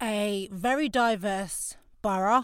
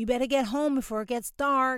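put-on American accent; 3 semitones higher than usual. Quoting what their dad often told them as a child, American accent. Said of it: "I'm not just putting on an American accent for banter".

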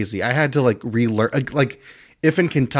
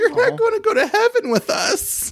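very high, tearful voice through sobs. Retelling what a sobbing friend said at dinner: imitating someone sobbing. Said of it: "she started sobbing, and she went".

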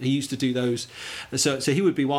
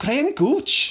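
put-on Welsh accent, very high and loud; 12 semitones higher, 5 dB louder than usual. In a game saying cricketers' names in regional accents: Welsh accent. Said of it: "Or two Welsh".

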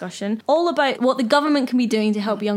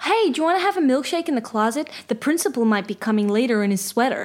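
attempted American accent; 2 semitones higher than usual. Speaker shows what they do when they try an American accent: American accent. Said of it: "What I do when I try and do an American accent".

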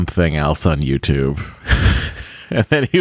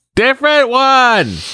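put-on very high, full-throated, top-of-lungs bellow; 5 dB louder than usual. Retelling being woken during the movies by him, imitating a shout at top of lungs. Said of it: "Like at the top of his lungs".

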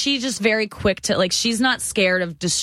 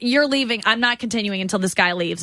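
ordinary talk

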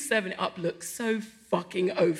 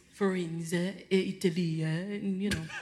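bad put-on French accent, "you" drawn out; 3 semitones lower, 6 dB quieter than usual. Telling a story about a restaurant in florence, in a french accent. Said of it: "That was French".

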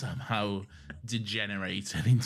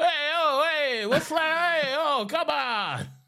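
put-on very high, loud, stock New York accent, griping; 9 dB louder than usual. Describing the crew's reaction when told to put Dalekanium on the mast, imitating New York complaining. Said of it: "generic New York complaining noises".

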